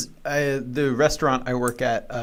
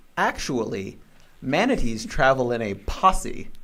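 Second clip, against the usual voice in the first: usual speaking voice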